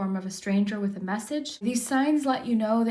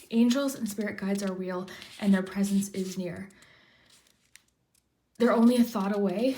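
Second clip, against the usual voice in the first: tearful voice catching, choked up. Reading comforting affirmations aloud, getting emotional and crying. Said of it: "like I'm getting emotional".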